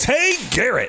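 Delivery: very high radio play-by-play announcer call. Calling a football sack for the Wildcats, doing a Mike Keith impersonation. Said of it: "That's my best Mike Keith impersonation".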